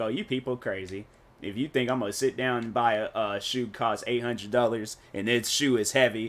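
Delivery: ordinary talk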